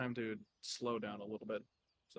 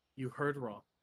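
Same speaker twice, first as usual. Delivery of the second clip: frosty, icy, cold chilly tone. Voicing a character who peers over her head: cold tone. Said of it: "in a bit of a cold tone".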